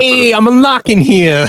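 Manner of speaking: put-on Brooklyn accent, pitched way up. A player voices an orc character's lines in a Brooklyn accent. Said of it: "That's what his common sounds like".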